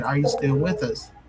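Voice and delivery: ordinary talk, nothing marked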